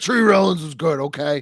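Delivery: acted heated, defensive, angry, high-pitched tone. Retelling how dad defended a player, imitating an angry dad. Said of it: "he was getting, like, real angry with me".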